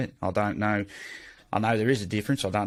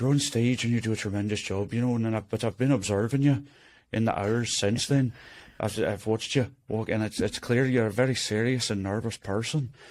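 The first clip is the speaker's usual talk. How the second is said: put-on Irish accent throughout. Retelling what a man from Ireland said at a bar: Irish accent imitation. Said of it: "he was like".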